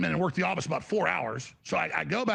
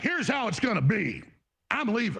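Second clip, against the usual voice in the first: bossy, dictating pimp voice; 4 semitones higher than usual. Retelling a phone call where someone talked like a pimp: imitating a pimp-like talk. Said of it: "talking to me like he's literally a pimp".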